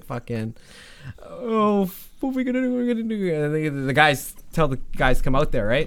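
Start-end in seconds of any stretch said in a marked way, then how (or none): 0.1-3.3 mock very high, terrified, scared sobbing. Telling a story, acting out a frightened brother, imitating someone crying. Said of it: "He's like crying".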